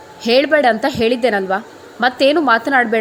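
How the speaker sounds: ordinary delivery, nothing marked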